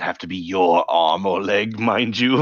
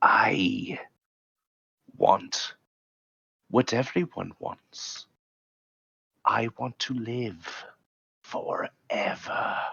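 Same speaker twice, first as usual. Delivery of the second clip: put-on breathy old lady voice, quieter; 7 dB quieter than usual. Narrating a scene where an old lady breathes into your ear, breathy old lady voice. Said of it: "with halitosis old lady breath, she breathes into your ear".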